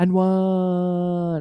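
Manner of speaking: goofy little dinosaur voice with "one" drawn out. Describing a silly video where a dinosaur speaks, funny soft dinosaur voice. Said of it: "in this really funny soft voice goes".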